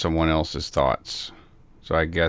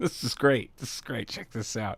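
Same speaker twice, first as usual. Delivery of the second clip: sarcastic, quieter; 6 semitones higher, 7 dB quieter than usual. Talking about going through a hard time, sarcastic.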